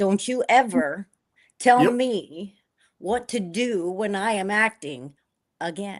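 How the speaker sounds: mock very slow, deliberate, curt, loud, unpleasant. Retelling an answer to a makeup artist: imitating own unpleasant retort. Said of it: "I wasn't very pleasant".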